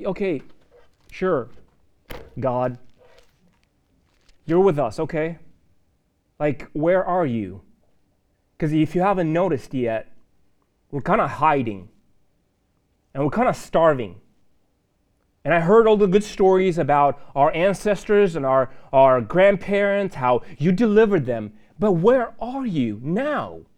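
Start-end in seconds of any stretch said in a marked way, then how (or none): none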